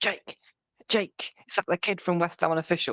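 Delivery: high Mancunian voice calling out from afar. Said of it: "this mank voice".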